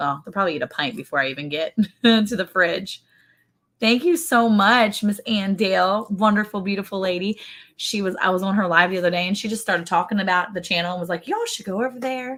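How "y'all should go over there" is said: sweet, cutesy, soft, light, high little voice. Retelling what she said on her live, speaker uses a cute little Ann Dale voice. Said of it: "In her cute little Ann Dale voice".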